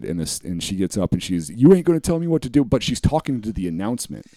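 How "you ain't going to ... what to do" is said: play-acted, very high, shrill, open screaming outburst. Retelling a plane passenger yelling at the announcement: imitating a woman screaming. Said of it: "openly screaming it".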